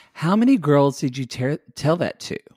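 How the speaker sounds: ordinary talk, nothing marked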